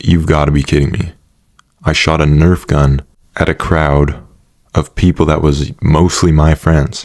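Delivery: ordinary delivery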